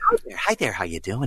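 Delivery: airy, breathy voice swooping up and down. Imitating a man's greeting: breathy, pitch rising and falling. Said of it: "He very breathy, and then maybe he'll go down".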